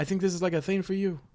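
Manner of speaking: botched put-on Italian accent. Recounting what family in Italy told them, the speaker quotes them in a failed Italian accent. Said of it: "I can't do the Italian accent right now".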